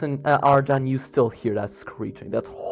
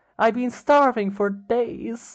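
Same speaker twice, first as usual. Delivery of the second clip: put-on high, young little girl's voice; 9 semitones higher than usual. In a role-play, a hungry visitor at the door pleads in a young girl's voice. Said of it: "you hear a young girl's voice as she says".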